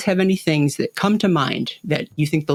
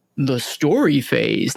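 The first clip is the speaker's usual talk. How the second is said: put-on announcer-style voice. Announcing the story phase while Paul is absent, Paul voice impression. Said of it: "I'm going to do my best Paul voice".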